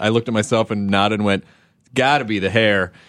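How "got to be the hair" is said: joking tone, slower. Speaker retelling a line said to their own reflection, retelling a joking line. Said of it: "just jokingly".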